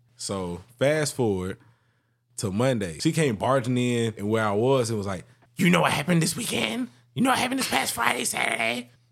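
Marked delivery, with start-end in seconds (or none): 5.6-8.9 very high, scratchy, rough, creaky voice. Retelling how a coworker came barging in, imitating a coworker. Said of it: "She talk like that?".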